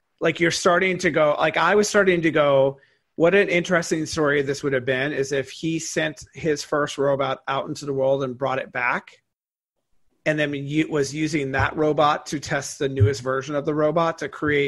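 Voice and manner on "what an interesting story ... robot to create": usual speaking voice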